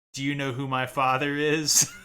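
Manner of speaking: loud flat monotone. Showing how Leia delivered her line, in a loud flat voice. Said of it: "I'm talking really loudly in like a very flat voice".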